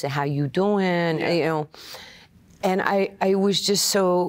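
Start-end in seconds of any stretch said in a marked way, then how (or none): 0.0-1.7 put-on Queens, New York accent. Speaker recalling an angry childhood in Queens, doing a Queens New York accent. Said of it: "I talked like this".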